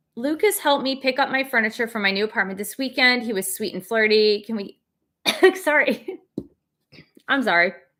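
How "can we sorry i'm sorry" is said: choked, broken-off, choking voice. Mid-question, the speaker breaks off and apologizes after choking on coffee; choking on coffee. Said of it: "I was choking on my coffee".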